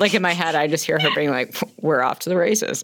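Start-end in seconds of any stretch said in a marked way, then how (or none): 1.8-2.8 put-on dry, deadpan tone. Imagining how a woman would say the line, the speaker imitates a dry, deadpan tone. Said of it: "such a dry and perfect tone".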